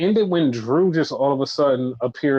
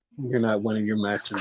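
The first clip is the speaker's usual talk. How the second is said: put-on creepy voice, lower and quieter; 4 semitones lower, 6 dB quieter than usual. Retelling a wrestling segment's line to the other speaker: imitating a creepy voice. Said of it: "You can do that voice like that".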